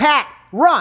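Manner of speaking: mock high, loud, full-volume scream. Retelling yelling at a frozen friend to run, retelling a scream. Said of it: "And I start screaming".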